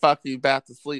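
plain

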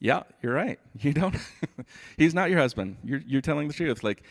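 playful laughing voice.

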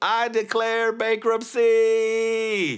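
mock shrill, loud shouting, bankruptcy stretched out. Retelling an episode where Michael walks into the office, imitating Michael shouting. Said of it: "he just starts shouting".

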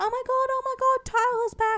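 put-on excited screaming. Recounting Tyler's return in a storyline, retelling her excited screaming. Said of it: "I was screaming".

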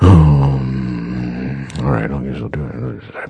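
very low, deep, slow dragging drawl. Retelling how an actor accepted a film offer: Harrison Ford impression. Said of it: "that was my Harrison Ford impersonation".

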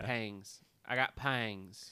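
a little Southern twang. Saying the episode title the way it sounds, a little Southern accent. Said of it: "Without sounding a little Southern".

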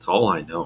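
low, soft, half-dejected, downcast voice. Recapping a movie scene, quoting the hobo's answer to Abby; retelling a dejected line. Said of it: "almost dejectedly".

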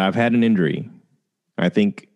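normal talking voice

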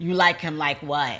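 usual speaking voice

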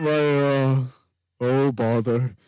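put-on cartoon donkey voice. Answering a co-host half-heartedly, then sounding like Eeyore. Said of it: "I'm starting to sound like Eeyore".

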